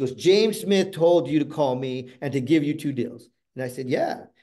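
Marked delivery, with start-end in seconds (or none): 0.1-3.3 condescending tone, doubting every word. Retelling a woman on the phone who didn't believe the speaker, mock-condescending tone. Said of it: "she said this very condescending".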